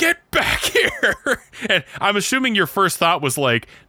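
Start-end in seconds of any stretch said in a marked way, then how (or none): 0.0-1.4 mock very high, mild half-yell. Retelling yelling at a friend to come back up the stairs: imitating own past yelling. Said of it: "yelling at you".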